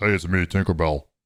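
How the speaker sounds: mock masculine voice. Describing a new movie version of a fairy, doing her voice: male Tinkerbell voice. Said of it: "Tinkerbell has balls now. And talks like this".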